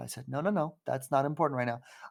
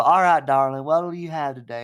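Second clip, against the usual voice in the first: put-on Southern accent, louder; 8 dB louder than usual. Retelling someone coming up to the table at a diner, imitating a southern accent. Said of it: "hearing a Southern accent".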